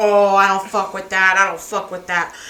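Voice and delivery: mock angry, worked-up man firing back. Retelling how a man who was told to shut up replied: mimicking an angry guy. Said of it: "he got all mad. He was like".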